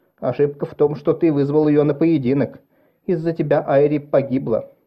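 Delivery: ordinary delivery, nothing marked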